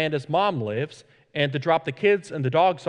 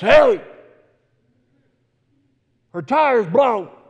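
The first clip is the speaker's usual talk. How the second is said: slow, hoarse, rasping voice raised in volume; 7 semitones higher, 7 dB louder than usual. Retelling a man smoking at the side of a building calling out, raspy voice. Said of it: "in this raspy voice".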